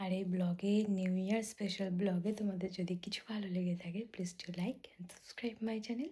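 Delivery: soft, quiet, late-night whisper.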